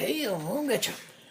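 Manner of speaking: put-on soft, high, rickety old-man voice. A speaker calls himself an old man, then talks in an old man Rickety Joe voice. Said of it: "old man Rickety Joe in the corner there".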